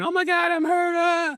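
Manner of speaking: very high, fake scream of pain. Demonstrating what you don't do when hit on the nose; mock screaming in pain. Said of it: "start screaming".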